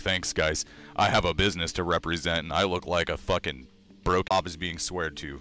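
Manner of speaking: ordinary talk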